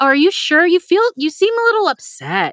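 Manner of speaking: high-pitched, mock concerned tone.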